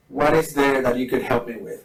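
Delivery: normal talking voice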